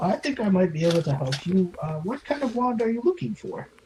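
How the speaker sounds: put-on elderly wizard shopkeeper voice. Storyteller voices the wand seller answering a traveler, in an old wizard voice. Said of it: "an old wizard who is just like completely wrinkled".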